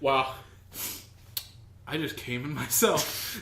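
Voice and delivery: put-on solemn, quiet tone. Imagining someone having a sudden realization: imitating someone solemn and quiet. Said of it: "all solemn and quiet".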